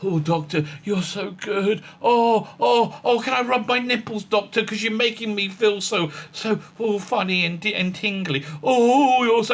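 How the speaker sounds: high, slow, adoring, worshipful, fawning gush. Mocking the companions who praise the Doctor: imitating fawning companions. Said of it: "everybody stood around going".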